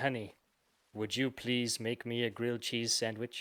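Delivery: soft, hushed, close half-whisper. Telling a story of dancing with his wife, retelling a half-whisper. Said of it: "I whisper into her ear and I say".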